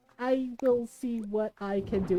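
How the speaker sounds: careful, slow, deliberate, unhurried delivery. Retelling his reply with the speaker's grandmother there; imitating him speaking really quietly. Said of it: "And he was really quiet".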